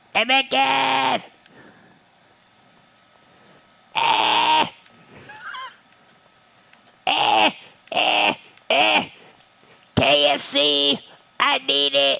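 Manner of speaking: very high-pitched, creaky cartoon kid voice. The speaker suddenly breaks into a South Park character impression. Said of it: "I was doing an impression of a character from South Park, and he's very high-pitched".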